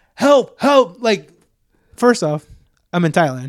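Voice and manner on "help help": mock, high-pitched shouted cry. Retelling being cornered by dogs in Thailand: retelling yelling for help. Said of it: "I'm like yelling".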